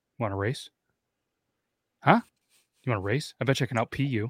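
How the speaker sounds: mock deadpan, dead serious, earnest, no joking. Retelling how a buddy challenged strangers at the urinal: imitating a buddy being dead serious. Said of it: "he'd be all serious".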